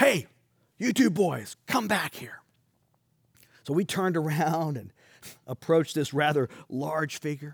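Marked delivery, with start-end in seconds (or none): 0.0-2.4 play-acted call, mild yet booming. Retelling being called back down the road, speaker quotes the figure in a booming voice. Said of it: "we heard this booming voice".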